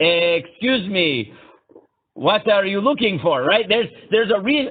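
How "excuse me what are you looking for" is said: put-on accent from Israel. Imitating an Israeli man approaching a lost person, heavy Israeli accent. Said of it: "the Israeli in the heavy accent".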